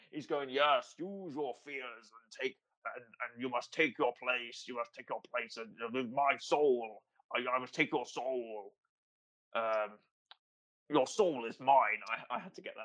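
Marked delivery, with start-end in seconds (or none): 0.4-12.0 stumbling sci-fi villain dark lord voice. Voicing a villain who demands a soul: Darth Vader voice. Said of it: "now I'm doing Darth Vader".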